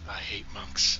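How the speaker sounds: whispered under the breath. Player character muttering about the bald group, whispering under breath. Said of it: "I whisper under my breath".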